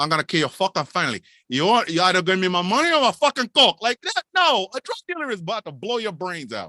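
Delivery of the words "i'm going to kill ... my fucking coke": put-on fake Cuban accent, louder. Acting out a drug dealer threatening someone over lost coke: fake Al Pacino Scarface voice. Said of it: "the fake Al Pacino as a fake Cuban Scarface".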